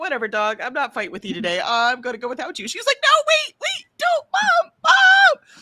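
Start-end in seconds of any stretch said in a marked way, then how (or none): 3.0-5.4 put-on shrill, very high, loud, drawn-out toddler wail. Mom retelling her child begging her to wait, imitating a whiny two-year-old. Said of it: "Like a two year old".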